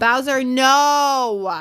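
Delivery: loud high yell with drawn-out "no". Mid-video, the speaker breaks off from talking to viewers: yelling at the dog. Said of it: "Sorry, guys, for yelling".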